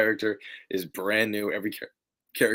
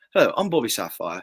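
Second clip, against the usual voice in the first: unpolished, fake, put-on British accent; 4 dB louder than usual. Practising an accent that still needs work: put-on british accent. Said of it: "I have to work on my British accent a bit more. ... I have to get into it".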